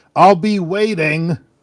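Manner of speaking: very loud, high shout. A character calls after the stranger as the doors open, raised voice. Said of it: "He'll kind of raise his voice as the doors open".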